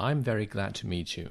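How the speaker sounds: ordinary talk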